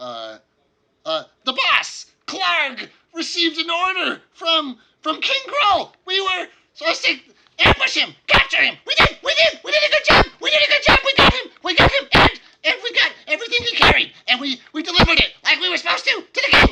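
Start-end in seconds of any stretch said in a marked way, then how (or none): 1.5-16.7 very high, very loud goblin voice. Voicing a goblin who reports to the players: goblin voice. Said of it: "turns to you and says".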